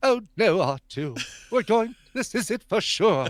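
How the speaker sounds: high-pitched robotic voice. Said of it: "like C three P O arms".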